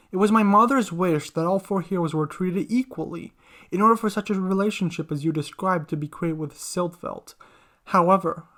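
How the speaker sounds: ordinary delivery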